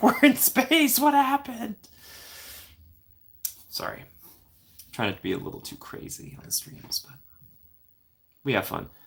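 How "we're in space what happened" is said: very high-pitched, shrieking, screaming yell. Picturing a ride where the character screams at riders: imitating Jake Sully screaming. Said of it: "Jake's, like, screaming at you".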